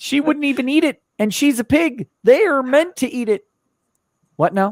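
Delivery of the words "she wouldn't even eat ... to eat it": put-on frog puppet voice. Reading a chat message aloud as Kermit: Kermit the Frog voice. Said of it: "As Kermit".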